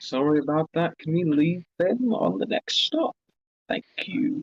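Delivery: slow, private, hushed whisper. Leaning over in character to apologise to Chuck: whispering. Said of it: "lean over and whisper to Chuck".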